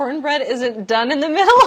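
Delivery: high, loud speech with laughter. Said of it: "I'm just crying".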